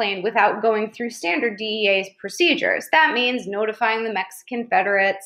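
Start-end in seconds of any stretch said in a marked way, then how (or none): none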